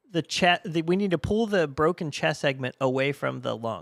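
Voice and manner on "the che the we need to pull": plain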